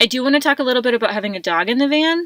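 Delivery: words tumbling out quickly. Switching to a new topic, the speaker starts talking really fast. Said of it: "that probably came out really fast".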